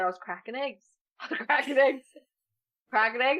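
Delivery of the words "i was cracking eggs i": plain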